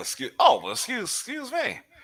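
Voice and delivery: high, squealed, mock-affronted "excuse me".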